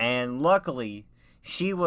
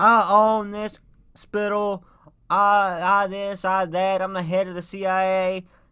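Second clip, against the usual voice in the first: put-on woman's scream, higher and louder; 5 semitones higher, 5 dB louder than usual. Retelling what a lady at the hospital screamed: imitating a lady screaming. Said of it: "we hear this lady just start screaming".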